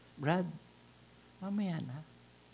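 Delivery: very quiet, low-key, very soft low voice. Demonstrating how to quiet a noisy person, in a soft, quiet voice. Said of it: "Mahinang boses, mababang boses".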